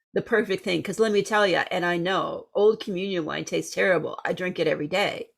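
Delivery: ordinary talk, nothing marked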